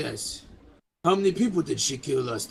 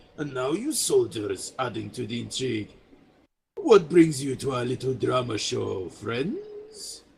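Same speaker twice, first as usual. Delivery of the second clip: charming, sly roguish voice with swooping pitch; 2 semitones lower than usual. Voicing a diplomat with a roguish smirk greeting strangers: roguish smirking diplomat voice. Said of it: "he gives a bit of a roguish smirk".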